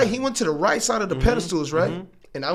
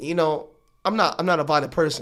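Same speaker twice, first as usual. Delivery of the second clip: plain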